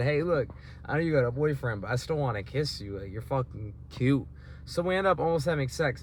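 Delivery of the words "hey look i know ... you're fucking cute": ordinary talk, nothing marked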